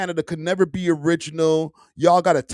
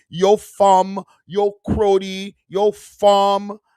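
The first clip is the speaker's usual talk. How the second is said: put-on Toronto accent, very slow, "fum" drawn out; 3 semitones higher, 4 dB louder than usual. Retelling how people react to the content, mock Toronto accent. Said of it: "the Toronto accent".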